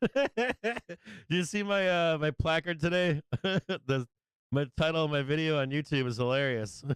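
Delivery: talking through laughter, chuckling between words. Speaker laughs at their own video title: laughing while talking. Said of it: "I'm laughing at myself this morning".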